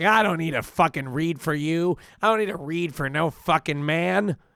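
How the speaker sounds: put-on angry, drunken tirade. Retelling what an angry drunk stranger said: imitating an angry drunk person. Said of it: "Somebody got mad at me 'cause they were drunk".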